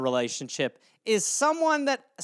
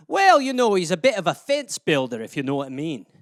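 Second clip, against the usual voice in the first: put-on Scottish accent held all the way through; 4 semitones lower than usual. Improvising a euphemism bit on request, in a scottish accent. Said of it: "euphemisms in a Scottish accent would be something like".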